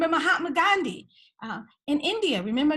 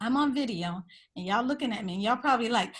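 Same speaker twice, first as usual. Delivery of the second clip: usual speaking voice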